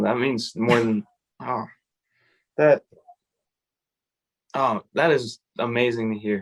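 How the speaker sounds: choked-up voice catching and stumbling with emotion. Hearing that the park saved a mother's son's life, the speaker responds, choked up. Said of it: "I'm getting emotional".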